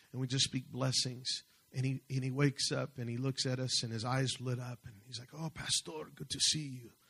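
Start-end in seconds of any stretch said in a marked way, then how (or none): 5.4-6.8 friendly put-on Spanish accent.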